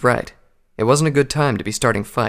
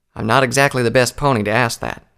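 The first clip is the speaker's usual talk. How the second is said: usual speaking voice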